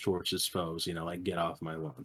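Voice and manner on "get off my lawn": irate, irritable grumble. Describing a taunt where Cranky shakes his cane: grumbling irate Cranky Kong voice. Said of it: "an irate Cranky shakes his cane and grumbles".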